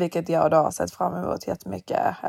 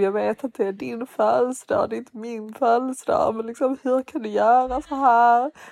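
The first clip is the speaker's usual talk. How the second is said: mock drunken, tearful crying, much higher, slower; 6 semitones higher, 3 dB louder than usual. Retelling a drunk taxi ride home on someone's birthday, retelling own drunk crying. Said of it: "Jag typ gråta i taxin".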